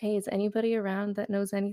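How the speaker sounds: put-on very calm, quiet, hushed voice. Retelling how a man barged in and asked around, retelling a very calm, quiet voice. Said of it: "very calm, very quiet, you know, voice".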